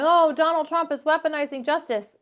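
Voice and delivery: mocking, high, whiny crybaby voice. Speaker mocks liberals complaining about the prosecutions, mock whining. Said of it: "these liberals that are crying, going".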